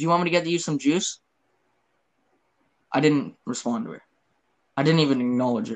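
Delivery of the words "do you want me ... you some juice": put-on nonchalant, offhand voice, higher pitch. Retelling how the neighbor broke bad news: imitating Sandy's nonchalant tone. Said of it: "Ever so nonchalantly".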